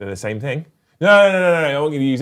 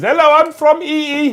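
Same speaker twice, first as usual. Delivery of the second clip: put-on very high, very slow, loud, thick Indian accent; 6 dB louder than usual. Imitating a caller on a phone call, in a thick Indian-style accent. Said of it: "it's always a very thick Indian style accent who says".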